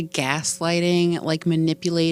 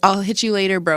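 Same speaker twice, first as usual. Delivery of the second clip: ordinary talk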